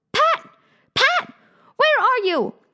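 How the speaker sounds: cross, irritated, angry comeback. Reading a story aloud, voicing the rabbit's reply to Pat, rabbit speaking angrily. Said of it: "said the rabbit angrily".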